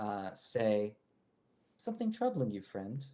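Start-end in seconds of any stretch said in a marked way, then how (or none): 1.8-3.0 gentle, calming, quick, soothing voice. A stranger suddenly speaks to the player character from the right; soothing voice. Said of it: "a fairly soothing voice".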